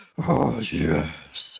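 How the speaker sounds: very low, deep, creaky orc rumble. Explaining how they softened their orc voice, demonstrating a very low orc voice. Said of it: "I can go very low".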